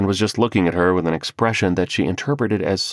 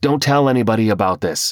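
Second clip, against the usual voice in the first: pleading, begging tone; 2 semitones higher, 3 dB louder than usual. After being chased into the yard by an alligator, asking a favour: pleading. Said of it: "he pleaded".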